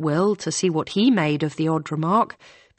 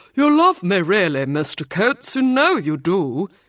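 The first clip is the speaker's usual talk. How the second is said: plummy, posh put-on professor voice; 4 dB louder than usual. [name], arm linked with Ryan, teases him in a plummy fake professor voice. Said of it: "said in her plummy fake professor voice".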